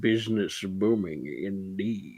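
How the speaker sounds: put-on soft elderly gentleman character voice. Voicing a thin, older gentleman with a cane: older gentleman character voice. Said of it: "He goes".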